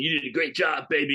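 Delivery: put-on smarmy movie-hero voice. Retelling an actor's line at a movie's end: Charlton Heston impression. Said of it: "doing his Charlton Heston impression".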